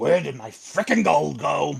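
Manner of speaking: gruff, rough, creaky robber character voice. A guest voice actor voices the robber who was stolen from, quick robber impression. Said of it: "I am going to do a quick impression".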